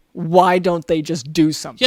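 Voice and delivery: ordinary talk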